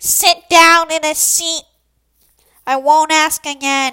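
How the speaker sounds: drawn-out, slow, very loud bellowing yell. A student retelling the teacher's outbursts in class, imitating her yelling. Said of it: "she constantly yells at us to sit down".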